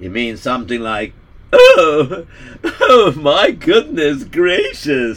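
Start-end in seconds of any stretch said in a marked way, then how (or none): 1.5-5.2 put-on pompous voice, higher, louder. Trying out a voice for a story character: pompous Gregory Blubberberry voice. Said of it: "Could he be like a pompous type of guy?".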